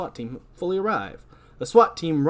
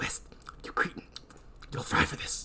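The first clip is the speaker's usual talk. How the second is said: ratty character voice, much quieter. Reading the warden's lines, now playing him as a rat: ratty voice. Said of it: "He's a rat now".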